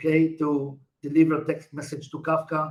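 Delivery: ordinary delivery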